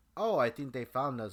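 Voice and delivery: ordinary delivery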